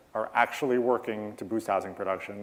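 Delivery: plain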